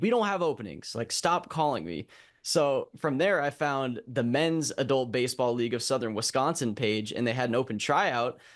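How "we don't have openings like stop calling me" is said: mock sarcastic voice. Retelling a man's reply on a phone call: imitating a snarky reply. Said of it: "the guy was kinda snarky about it".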